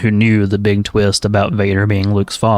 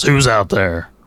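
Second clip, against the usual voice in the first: put-on deep, booming voice. Imagining hearing a voice from the house: James Earl Jones deep booming voice. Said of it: "James Earl Jones' deep booming voice".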